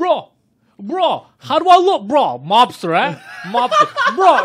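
very slow, loud, drawn-out, swooping show-off yell. Retelling how a friend tried on fur coats in a shop: imitating a friend yelling.

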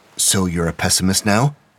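ordinary talk

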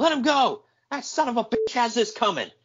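mock very high, wild, high-pitched yell. Telling how the men rushed in and held someone back, imitating someone shouting. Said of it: "Pillman shouts".

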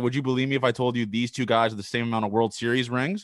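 ordinary talk

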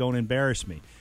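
normal talking voice

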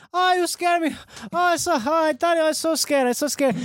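high-pitched put-on Spanish accent, female voice.

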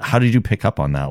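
rushed, rattled-off delivery. Retelling how Clarice asks Lecter how he noticed: imitating Clarice asking very quickly. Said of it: "she says that very quickly".

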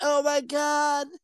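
put-on full Valley Girl accent. Discussing her heel American accent, the speaker imitates Lana in a Valley Girl voice. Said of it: "very Valley Girl-esque. And she's just like".

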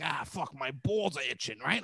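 coarse, crude put-on tough-guy voice. Showing how he could sound around the rich: put-on crude gavone voice. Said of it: "I could literally sound like a Gavone, right? Like this".

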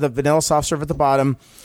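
ordinary talk

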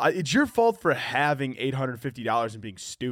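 ordinary delivery

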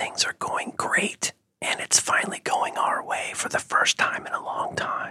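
hushed, soft whisper, like a secret. Telling the listener something as if it were a secret, soft whisper. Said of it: "I'm going to whisper to you and I'm going to act like it's a secret".

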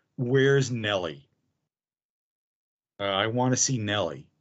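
put-on faint, barely audible whisper. Retelling a man asking for Nelly, in a voice barely a whisper. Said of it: "voice barely a whisper".

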